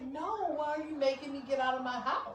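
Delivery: mock weepy, tearful, upset crying voice. Retelling a client's reply on moving day: imitating someone crying. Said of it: "she's, like, crying".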